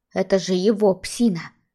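ordinary delivery, nothing marked

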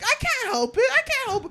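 mock whiny, very high-pitched and loud.

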